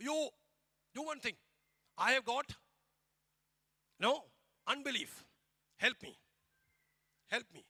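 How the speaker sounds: mock, anguished, high, loud, desperate crying out. Retelling the father's plea to God about his unbelief: imitating a desperate cry out. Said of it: "crying out".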